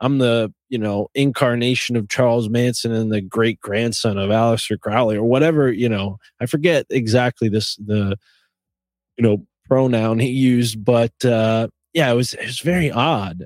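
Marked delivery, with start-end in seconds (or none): none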